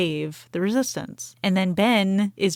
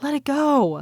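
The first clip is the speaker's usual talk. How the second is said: acted high-pitched scream; 7 semitones higher than usual. Retelling a film scene where a character starts screaming: imitating someone screaming. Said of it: "he kinda starts screaming".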